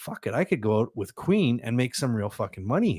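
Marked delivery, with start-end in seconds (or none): none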